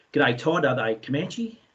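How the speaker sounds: ordinary talk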